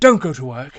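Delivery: very loud, bellowing politician voice, stumbling over the words. Offering an impression on request, speaker does a Boris Johnson impression. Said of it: "I can do a great impression of Boris Johnson".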